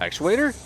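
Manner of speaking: pitch climbs at end on actuator. Saying a word that ends in a question mark, rising pitch on actuator. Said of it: "You gotta go up at the end of saying it if you have a question mark".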